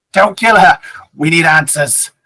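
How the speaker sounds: contemptuous, sneering tone. A narrator voices a professor reacting to a woman holding a mace, sneering. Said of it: "He kind of sneers and he just says".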